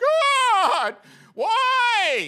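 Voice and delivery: very high, very loud wailing sob, swooping pitch. Describing his first response when life starts hitting him, acting out crying. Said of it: "I'm just crying right now".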